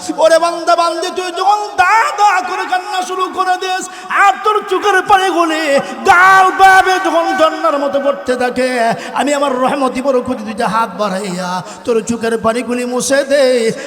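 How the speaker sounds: high, loud, booming calling voice.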